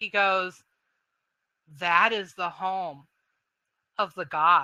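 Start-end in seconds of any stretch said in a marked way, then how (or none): 1.8-4.6 very reverent, worshipful, devout delivery. Narrating a man who points to the island's center and answers, reverent voice. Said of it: "he says in a very um reverent voice".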